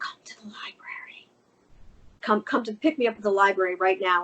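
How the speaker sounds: put-on whisper. Retelling a phone call to a husband from the library: retelling a whisper. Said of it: "Why are you whispering?".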